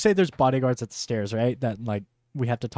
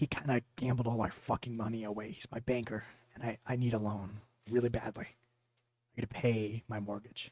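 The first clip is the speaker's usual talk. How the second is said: whispering, much quieter; 11 dB quieter than usual. In a role-play scene, a character speaks to another character whispering. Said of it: "I'm like kind of whispering".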